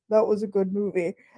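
rough, gruff, manly fatherly dad voice. Retelling his father's verdict after first watching a subtitled film, imitating dad's gruff manly voice. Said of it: "his gruff manly voice says".

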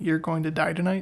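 normal talking voice

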